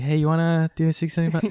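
play-acted loud, odd, creepy, suggestive tone. Imitating how they sound starting conversations, in a mock-creepy greeting voice. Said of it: "how creepy I sound when I'm trying to like initiate conversations... why does my voice change? I'm like".

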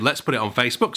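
ordinary talk

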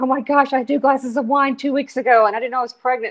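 crying, high-pitched, teary voice. Retelling yourself at the doctor's after finding out you were pregnant, imitating yourself crying. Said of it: "I'm at the doctor's crying".

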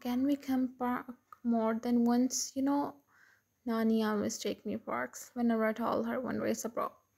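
plain

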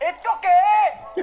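dramatic, theatrical cry.

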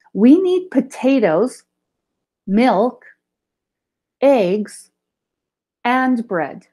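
list with short pauses after each item. Teaching comma use when speaking, short pauses after each list item. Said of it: "I will have a small stop where the comma is".

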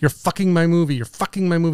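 acted-out tantrum ranting. Retelling how someone threw tantrums on set: imitating someone yelling. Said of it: "start yelling".

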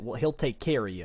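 put-on Texan accent. Joking about how a texan should have said it, in a texas accent. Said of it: "We're talking in Texas accents".

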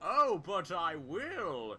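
mock hammy cliché villain voice. Answering the "you'll never get away with this" speech: mock cliché villain comeback. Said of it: "I will respond with the usual comeback".

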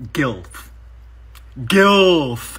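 Gilf with heavy stress on ilf. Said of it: "Emphasis on the ilf!".

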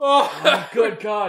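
talking while laughing hard, crying with laughter. Reacting to an old guy's screaming: crying with laughter. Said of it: "I'm actually crying right now".

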